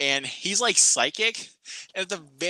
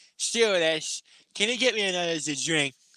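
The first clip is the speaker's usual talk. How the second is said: put-on drunk speech; 3 semitones higher than usual. Retelling a scene on a plane, imitating a drunk passenger. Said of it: "he's sitting there like".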